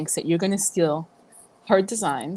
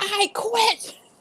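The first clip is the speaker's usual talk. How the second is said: play-acted, very high, shrill screamed outburst. Retelling quitting over the phone to the boss: imitating own scream. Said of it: "and I screamed".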